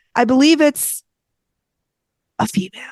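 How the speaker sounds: put-on, mock-dramatic long dead pause. Retelling what someone said about a body in the ground, with a long dramatic pause. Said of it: "long, dramatic, dead file pause".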